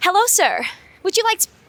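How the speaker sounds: bad fake American accent. Trying out pretending to be american, the speaker does a put-on american accent. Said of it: "American accent".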